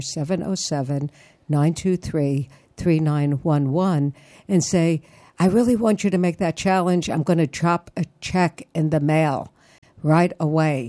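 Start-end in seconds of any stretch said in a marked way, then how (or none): 0.0-4.1 at a slower pace. Repeating the phone number a second time for listeners, said slower. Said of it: "I'll say it slower".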